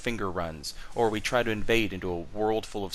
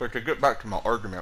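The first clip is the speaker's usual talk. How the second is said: speaking with food in mouth. Apologizing to listeners while returning to a Dark Souls argument, talking with a mouthful. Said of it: "got a mouthful of pizza rolls".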